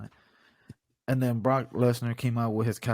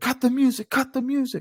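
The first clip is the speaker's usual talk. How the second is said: high, loud, mock promo-announcer shouting. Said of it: "and then I would have said".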